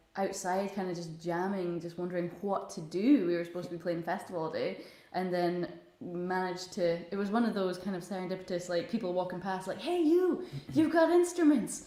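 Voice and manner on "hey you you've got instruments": put-on high, loud American accent. Retelling what passersby said to the speaker's group, in an American accent. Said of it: "why they have an American accent".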